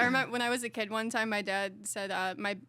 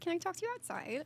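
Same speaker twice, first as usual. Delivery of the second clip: play-acted soft, pitched-up, nice professional politeness; 9 semitones higher, 5 dB quieter than usual. Retelling asking a manager to talk outside, imitating a nice professional voice. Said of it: "in like my most like nice professional voice".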